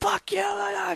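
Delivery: very high, crazed, raging screaming. Retelling a player raging after being killed: imitating someone screaming in rage. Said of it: "just screaming like a crazy man into his headset".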